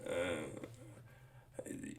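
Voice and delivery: low, raspy, crackly half-whisper, reluctant and barely trying. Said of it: "It's like a little raspy".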